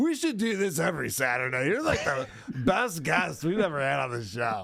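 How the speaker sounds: acted tipsy, slurring, overeager, excited drunken gushing. Retelling how John acted three beers in: imitating drunk, excited John. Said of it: "He's all excited that his guest is there".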